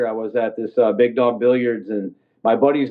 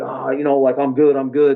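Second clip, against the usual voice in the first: mock-pained voice, acting hurt. Retelling a fight, the speaker quotes the guy whose tooth he knocked out, imitating someone hurt. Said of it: "so he's all hurt".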